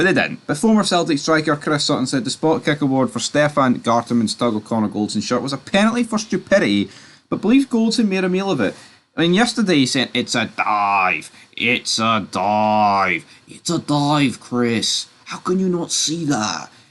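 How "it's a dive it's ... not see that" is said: put-on Norwich accent. Retelling a remark about a dive from yesterday: put-on Norwich accent. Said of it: "I would say Norwegian accent".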